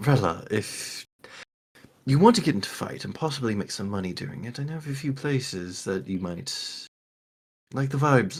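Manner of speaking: dropped to a soft, very quiet hush. Speaking in character to another character: lowered voice. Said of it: "kind of lower my voice".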